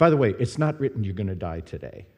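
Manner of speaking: put-on whisper. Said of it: "God whispered to me".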